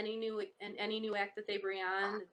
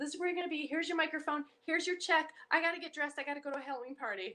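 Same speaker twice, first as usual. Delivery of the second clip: mock breathless, out-of-breath speech, higher pitch; 7 semitones higher than usual. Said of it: "she's all out of breath".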